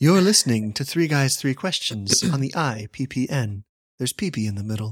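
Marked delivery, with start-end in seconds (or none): 0.0-3.6 put-on radio voice, delivered much slower. Joking about his NPR voice, a co-host announces their show in a soothing NPR radio voice. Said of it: "This is my NPR voice".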